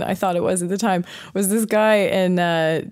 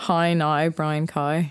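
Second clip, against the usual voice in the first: amateurish, attempted, put-on Northern Irish accent; 3 semitones lower, 4 dB quieter than usual. Letting the other person judge your try at it, in an attempted Northern Irish accent. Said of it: "I can say, okay, you can judge it".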